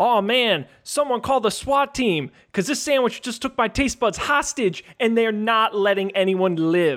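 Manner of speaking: high, way over-the-top hyped delivery. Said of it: "you gotta go way over the top".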